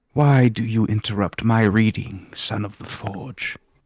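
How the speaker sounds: godlike woman's voice. Voicing a goddess who answers a player's divination: voice of a goddess. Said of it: "a voice comes out and says".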